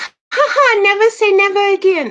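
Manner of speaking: very high, loud, slow voice. Retell what a teacher said to you when you were quiet and shy, in a Minnie Mouse voice. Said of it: "this teacher had the voice of Minnie Mouse".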